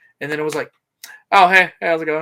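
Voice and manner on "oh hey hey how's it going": very loud, breezy, offhand, casual tone. Retelling a wrestler strolling in while everyone panics: imitating a casual greeting. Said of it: "He's just casually walking in".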